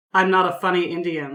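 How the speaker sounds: dry, flat, expressionless deadpan delivery. Retelling a driver's reply to a rude question: imitating Mike's deadpan reply. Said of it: "Mike's response was deadpan".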